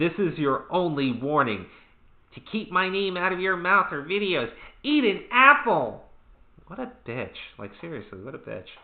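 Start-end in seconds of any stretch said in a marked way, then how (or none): 0.0-6.0 put-on very high, whiny, petulant child voice. Reading a YouTuber's response tweet aloud to co-hosts: mock petulant child voice. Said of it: "I only imagine a petulant child saying".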